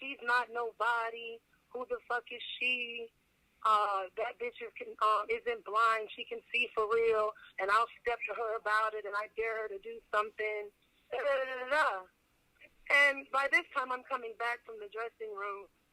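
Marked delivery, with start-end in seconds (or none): none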